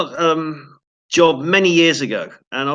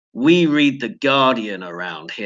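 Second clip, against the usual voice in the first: Wild West cowboy-style tone; 4 semitones lower than usual. Retelling what the production crew said, Wild West tone. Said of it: "in that type of, um, Wild West tone".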